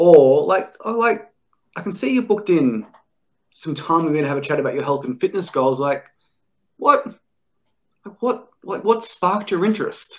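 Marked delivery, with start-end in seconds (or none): 6.8-10.2 genuinely curious, inquisitive tone. Showing how to open a booked call, in a very curious, questioning tone. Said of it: "I'm saying it with a very curious, a very questioning tone".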